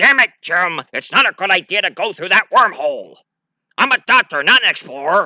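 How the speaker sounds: gruff doctor voice. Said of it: "McCoy going like".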